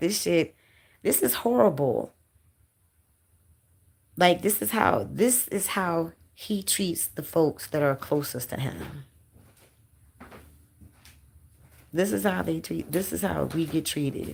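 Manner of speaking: voice right on the edge of crying, fighting tears. A speaker tells viewers how they get treated: holding back tears. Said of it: "I'm trying my best not to cry".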